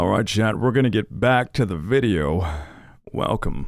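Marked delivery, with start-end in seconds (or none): 3.1-3.7 whispered, breathy moan close into the mic. Welcoming chat back to the video: moaning into the mic. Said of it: "I moaned into the mic like that".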